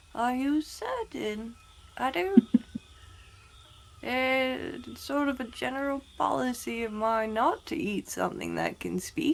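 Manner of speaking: hushed, voiced half-whispered stage whisper. Mildew half-whispers back to a talking flower, Mildew half-whispering back. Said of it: "whispers back".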